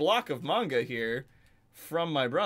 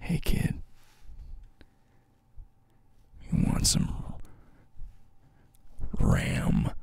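soft ASMR whisper, close to the ear; 3 semitones higher than usual. Doing a joke bit for the viewers, in an ASMR whisper. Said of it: "whisper RAM into your ear holes".

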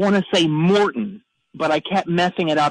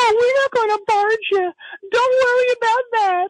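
very high, airy and breathy voice. Act out Dante speaking off the show, in Dante's high, breathy voice. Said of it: "It was this real high and breathy voice".

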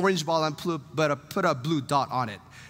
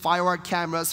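ordinary talk, nothing marked

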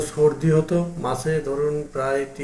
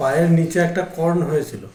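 speaking up louder. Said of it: "একটু জোরে বলুন।".

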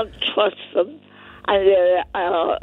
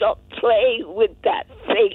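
put-on blunt, firm, commanding tone; 2 semitones higher than usual. Retelling a train incident, repeating her own words: retelling a very loud command. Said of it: "I said to him in a very loud voice".

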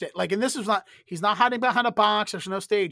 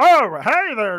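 high, loud, puppet-style voice; 5 semitones higher, 9 dB louder than usual. Pitching an Ernie voiceover to the other speaker, trying an Ernie impression. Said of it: "you sound like you do a very good Ernie impression".

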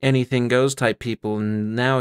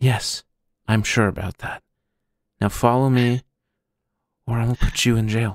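theatrical whisper. Storyteller voicing a character who bends down to a player: whispering. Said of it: "bends down to you and whispers".

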